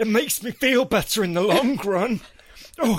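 put-on high-pitched, needy, whining northern voice.

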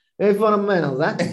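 Italian-American accented speech. Trying to say great fundamentals in an accent: Italian-American accent. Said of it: "I was trying to do great fundamentals in an Italian-American accent".

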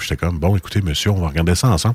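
very low, deep, calm, unruffled broadcaster radio voice. Retelling what was said at work to a customer: imitating own deeper voice. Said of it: "j'avais une voix comme ça".

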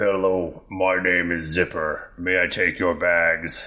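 slow, small, impish, demonic little creature voice. Voicing a little smoke mephit who greets travelers: voicing a smoke mephit. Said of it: "He goes".

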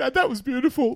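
put-on teary kid voice.

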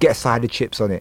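ordinary delivery

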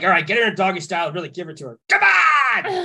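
put-on worked-up angry man, high, swooping. Speaker retells what a man kept saying, imitating an angry man. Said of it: "the guy was very angry".

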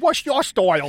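bad, poor fake New Zealand accent. Mocking the redubbed voice of the fighter Parsons: Parsons in bad New Zealand accent. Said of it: "sounds nothing like a New Zealand accent".

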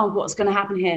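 ordinary talk

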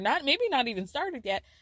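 ordinary talk

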